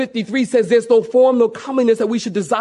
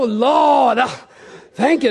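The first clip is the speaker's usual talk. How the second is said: mock prayer voice, slower. Imagining what these guys do at a restaurant drive-up, in a mock praying voice. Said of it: "you change your voice and like all your words end with duh".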